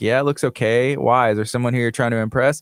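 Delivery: normal talking voice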